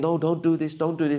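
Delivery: gentle, coaxing tone. Showing how to calmly stop someone pulling at you: soft way. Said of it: "in a soft way".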